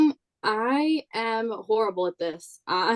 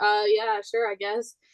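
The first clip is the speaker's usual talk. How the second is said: flat, slow, unenthusiastic put-on tone. Retelling own reply when asked to be official: imitating own unexcited reply. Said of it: "you don't ever have to sound excited," 'cause that's how I said it".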